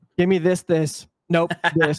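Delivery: put-on curt rudeness. Retelling a coworker ordering from a drive-thru AI: imitating rude ordering. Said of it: "he's talking like a fucking asshole".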